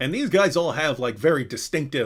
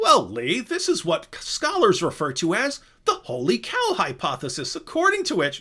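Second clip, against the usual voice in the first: pitched-up voice with swooping, swinging pitch; 6 semitones higher than usual. Retelling a video of a debate answer, William Lane Craig impression. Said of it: "so I just went like that".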